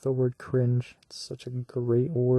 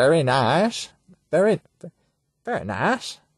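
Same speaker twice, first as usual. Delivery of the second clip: slow approving voice, each word drawn out; 4 semitones higher, 4 dB louder than usual. Quoting Borat about getting to go home: Borat voice. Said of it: "how does Borat say it?".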